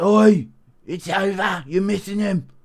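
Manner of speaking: high-pitched referee-style calling voice. Do a bit of Mark Goddard instructing Anthony Smith to drive into his misses, Mark Goddard impression. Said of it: "Impression of Mark Goddard".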